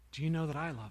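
quiet, soft voice. Retelling a quiet voice that came in while praying: quiet voice. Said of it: "a quiet voice comes in".

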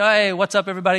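put-on excited, eager voice. Retelling a newcomer greeting a full common room: imitating an excited greeting. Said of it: "he's just so excited to meet my friends".

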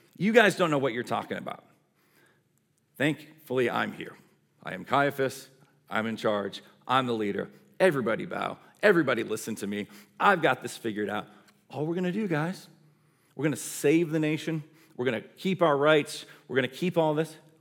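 acted-out lordly, smug, self-important know-it-all voice. Imagining the high priest Caiaphas speaking to the others: smug Caiaphas voice. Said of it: "imagine him kind of smug, sitting back".

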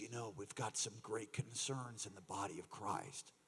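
very soft, hushed, quiet voice. Retelling what a visiting prophet said about concerns in the church: imitating hushed tones. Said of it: "he talks in hushed tones like this".

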